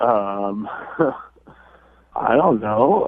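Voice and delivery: slow, slightly nervous, half laughing voice. Answering why a date's text went unanswered: a little nervous. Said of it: "you sound a little nervous".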